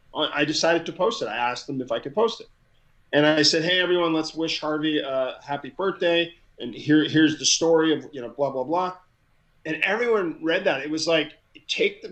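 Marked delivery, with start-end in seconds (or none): none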